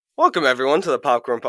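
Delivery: voice breaking. Podcast host opening the show, voice cracking. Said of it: "my voice cracked".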